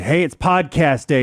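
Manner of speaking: put-on extreme sarcasm. Retelling how his wife woke him this morning, imitating wife's extreme sarcasm. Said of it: "in an extremely sarcastic manner".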